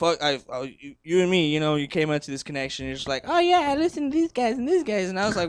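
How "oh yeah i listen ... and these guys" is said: rough, loose, very high-pitched voice. Imitating how another speaker described his music taste: loose impression of a friend. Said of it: "That's my loose impersonation".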